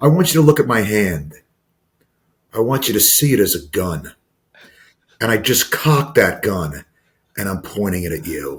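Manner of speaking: acted, flat, dry, dead serious deadpan. Retelling what one man said to another, with a retold deadpan delivery. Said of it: "but like deadpan".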